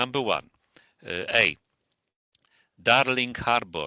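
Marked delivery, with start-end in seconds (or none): 2.8-3.9 strong Polish accent. Reading a name aloud for a listener to judge: heavy Polish accent. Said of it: "each form will be pronounced with a heavy Polish accent".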